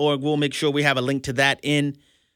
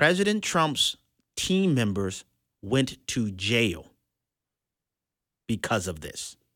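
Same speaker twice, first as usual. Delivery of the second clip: very, very slow, with long pauses. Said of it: "I wanna say this very slowly, very, very slowly".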